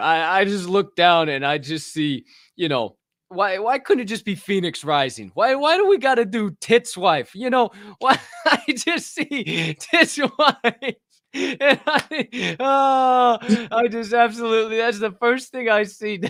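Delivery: laughing through the words, cracking up, very high. Talking about the families held, laughing while talking. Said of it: "sorry, I can't keep it together".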